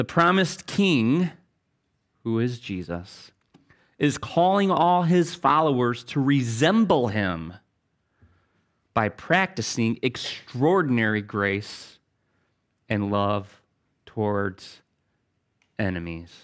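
very slow, unhurried, deliberate dictating-style reading. Rereading a statement so listeners recording or writing it down can follow, said slowly. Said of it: "I'm going to say it slow".

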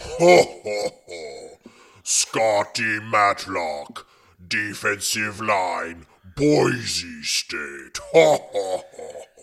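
put-on booming alien slug creature voice. Announcing the next draft pick, as a Jabba the Hutt impression. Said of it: "my best impression of none other than Jabba the Hutt".

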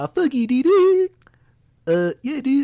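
very high, loud, swooping sing-song drawl, drawn out. Mocking a friend in an argument: imitating CJ. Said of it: "let me pretend to be C J".

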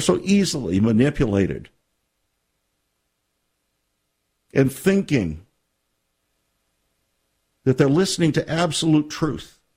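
on the verge of tears, fighting them back. Speaking to listeners about God's people, holding back tears. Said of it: "I'm having a hard time holding back the tears right now".

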